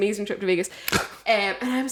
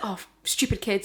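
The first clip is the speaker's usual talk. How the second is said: put-on English accent, muttered under the breath. Retelling what a mum said walking past: imitating an english accent. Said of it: "in her English accent".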